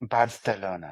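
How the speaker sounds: put-on Spanish accent, sultry. Asked by the other speaker to say Barcelona like Hilaria Baldwin, sultry Hilaria Baldwin Spanish accent. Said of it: "I said it very sultry too".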